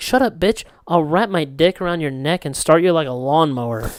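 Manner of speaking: normal talking voice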